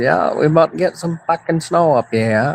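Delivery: put-on high-pitched Maine accent throughout. Retelling a talk with his dad in a Maine accent. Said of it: "That's my Maine accent".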